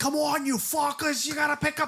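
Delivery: acted-out very high yell, thickest Boston accent. Retelling what a character in a trailer shouts: imitating someone shouting. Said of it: "this guy is shouting".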